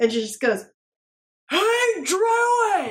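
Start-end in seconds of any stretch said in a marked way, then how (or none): 1.5-2.9 loud shout after a huge breath, higher. Voicing a character who calls out to a hidden druid: shouting loudly after a huge breath. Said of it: "takes a huge breath in ... and just goes".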